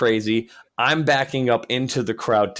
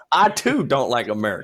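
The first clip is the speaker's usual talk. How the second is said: fake, put-on Kentucky accent. Joking along about Kentucky guys: put-on Kentucky accent. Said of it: "Your accent says otherwise".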